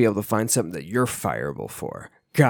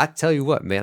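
half-hearted, badly done put-on sports broadcaster voice; 4 semitones higher than usual. Trying to imitate a voice while joking about going down the river: attempted Jon Gruden voice. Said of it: "I can't do a John Gruden voice".

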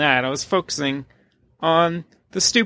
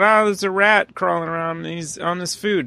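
plain

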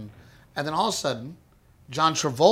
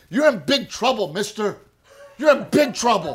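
high, stern scolding, voice pitched up; 6 semitones higher, 4 dB louder than usual. Retelling a dream where John Travolta scolds the speaker: imitating John Travolta scolding. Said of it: "he just scolded me".

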